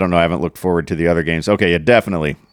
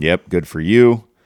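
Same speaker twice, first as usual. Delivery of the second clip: slow, cheeky, sassy wise-ass tone. Congratulating another speaker on winning money: sassy. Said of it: "it did sound sassy".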